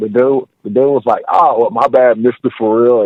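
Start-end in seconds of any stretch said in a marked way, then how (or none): 1.3-3.1 snide, sarcastic, acted-out sorry. Retelling what a dude said about the nickname: imitating a sarcastic tone. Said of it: "He said it all, like, sarcastically".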